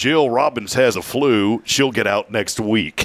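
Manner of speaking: distinctive local radio-announcer delivery. Retelling a hospital report on the radio: imitating a Cooter Roberson type voice. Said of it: "Very distinct voice, like a Cooter Roberson type voice".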